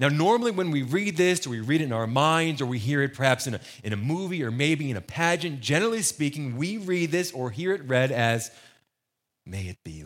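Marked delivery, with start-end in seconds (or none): 9.5-10.1 hushed, meek, very soft and low. Speaker demonstrating how this prayer line is usually read: quiet, demure, submissive. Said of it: "very, very quiet, very demure, very submissive".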